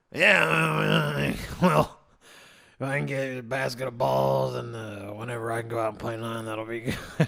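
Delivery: rough, gravelly, groggy voice with drawn-out 'yeah'. Retelling talking to a lady in the morning, imitating his groggy morning voice. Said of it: "the whole time I was talking like this".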